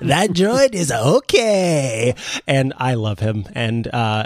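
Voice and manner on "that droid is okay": toy-like voice with the word okay drawn out. Imitating a talking plushie's voice box: Babu Frik voice. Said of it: "Babu Frik plushie that has a voice box".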